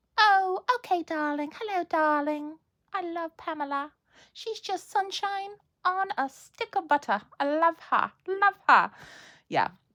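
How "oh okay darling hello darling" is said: put-on Essex accent with raised voice. Trying out an Essex accent, imitating Pamela. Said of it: "talking a little bit like Pamela now".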